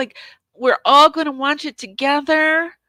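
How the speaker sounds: very whiny, high-pitched whining tone. Mocking a woman's way of talking, imitating her whiny voice. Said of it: "talking in this really whiny voice".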